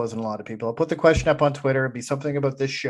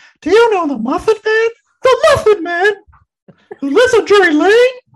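put-on cartoon character voice, very high and loud; 10 dB louder than usual. Asked to say a line in the gingerbread man's voice: Gingerbread Man voice. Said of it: "You have to say it in the voice of the... of the gingerbread man".

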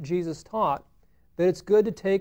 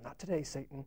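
much quieter, lower, put-on mumble under the breath; 5 semitones lower, 14 dB quieter than usual. Speaker retells what the lady behind the counter muttered; imitating a mumble under the breath. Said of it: "I hear her kind of mumble under her breath".

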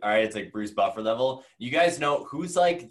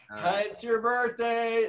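very high-pitched, slow, warm motherly voice; 12 semitones higher than usual. Teasing the other speaker's podcast intros, imitating a mom's birthday greeting. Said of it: "most days it's like your mom on a birthday".

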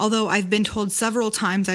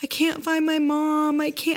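put-on tearful little girl voice, high and crying; 8 semitones higher than usual. Retelling a haunted house scene: imitating a crying little girl. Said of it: "had like her head in her hands crying".

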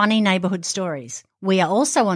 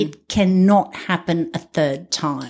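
ordinary talk, nothing marked

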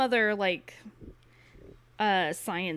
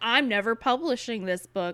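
normal talking voice

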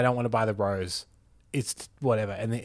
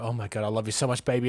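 acted smitten voice, gushing with affection; 4 dB quieter than usual. Acting out a scammer-defeating scene, putting on smitten gushing affection. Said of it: "get really hit and go".

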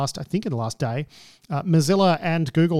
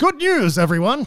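put-on high-pitched old man voice; 7 semitones higher, 4 dB louder than usual. Recalling how the old guy from Futurama announced terrible news: Futurama old guy voice. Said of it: "the old guy ... he'd say".

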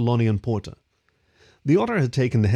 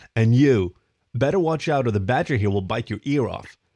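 usual speaking voice

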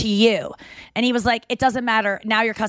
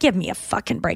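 put-on female muttering, lower; 3 semitones lower than usual. Retelling a passenger's reply to a flight attendant about masks: imitating a woman muttering. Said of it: "She kinda muttered it".

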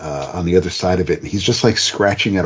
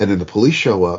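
usual speaking voice

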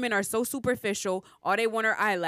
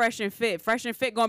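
plain

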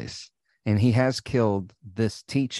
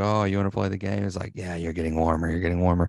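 put-on threatening killer voice; 3 semitones lower, 3 dB quieter than usual. Retelling a movie phone call where a caller starts talking like Ghostface. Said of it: "he starts talking like Ghostface".

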